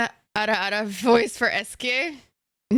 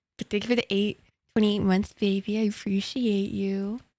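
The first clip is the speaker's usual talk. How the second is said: playfully flirtatious, sweet-talking voice; 3 dB quieter than usual. Thanking a viewer for twenty-eight months: flirty. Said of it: "Why does it feel like I'm flirting right now?".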